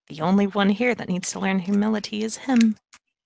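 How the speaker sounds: mumbled muttering under her breath. Her character reacts to a remark about humility; muttering under her breath. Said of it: "kind of mutter under her breath".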